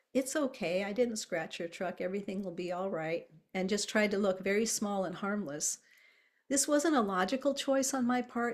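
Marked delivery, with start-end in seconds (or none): none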